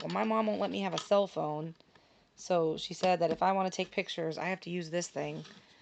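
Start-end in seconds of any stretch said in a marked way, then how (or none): none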